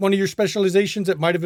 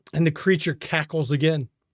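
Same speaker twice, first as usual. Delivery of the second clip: ordinary talk, nothing marked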